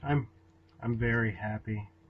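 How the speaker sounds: low, flat, droopy, dull, listless deadpan monotone. Asked if he's happy at the show's start, a co-host answers in a flat, droopy monotone. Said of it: "You sound like fucking droopy right now".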